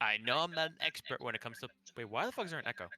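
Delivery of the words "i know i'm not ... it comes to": reptilian lizard man creature voice. Speaking in character to another character: lizard man voice. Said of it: "in my fucking lizard man voice".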